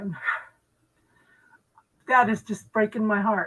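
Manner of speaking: choking up, near tears. Telling another speaker what is breaking her heart, choking up, near tears. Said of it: "I'm gonna cry".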